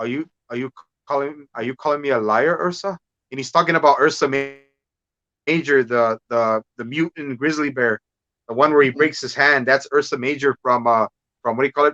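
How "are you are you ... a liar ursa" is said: put-on Russian accent. Fan describing a movie scene, quoting Red Guardian in a Russian accent. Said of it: "especially the Russian accent".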